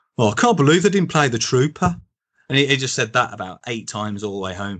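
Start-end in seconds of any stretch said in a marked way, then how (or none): 0.2-2.0 put-on broad Birmingham accent, grumbling. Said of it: "in this strong Brummie accent".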